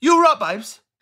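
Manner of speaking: said quickly. Showing the other speaker how the phrase sounds, said quickly. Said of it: "because you say it so quickly".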